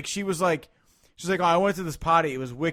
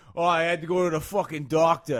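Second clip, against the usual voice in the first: put-on punk guy voice. Contrasting a woman's cute remark with how a punk dude says it, imitating a punk dude. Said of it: "if you hear like a fucking punk dude".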